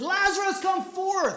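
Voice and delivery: loud, high-pitched ringing call. Speaker retells how Jesus called out to Lazarus: loud voice. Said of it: "Jesus used a loud voice".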